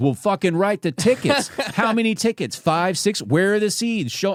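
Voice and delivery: very high, mouthy, smart-aleck tone. Retelling talking back to the man writing him tickets, retelling own smartass retort. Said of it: "I'm I'm being a smartass".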